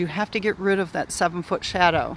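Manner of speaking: ordinary talk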